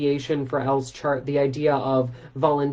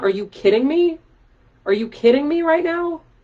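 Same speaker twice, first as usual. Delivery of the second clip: normal talking voice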